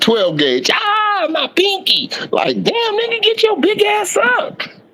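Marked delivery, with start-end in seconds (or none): 0.7-2.1 put-on, over-the-top, exaggerated pained wail. Mocking a player who falls over a jammed pinky: imitating an exaggerated cry of pain. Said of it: "fall on the ground like you shot him".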